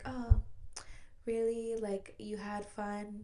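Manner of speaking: slow, sultry, drawn-out put-on stripper voice. Retelling a woman's reply to a man who said it was just fun; imitating her stripper voice. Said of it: "in like her stripper voice".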